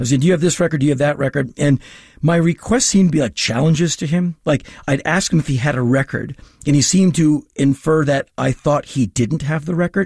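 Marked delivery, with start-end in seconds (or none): none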